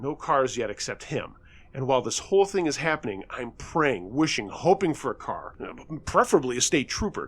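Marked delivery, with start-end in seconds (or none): none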